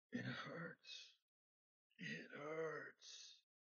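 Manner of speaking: faint, breathy, barely there whisper. Game master voicing the whispers a player follows through the wind, whispering. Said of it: "you head off towards his whispers".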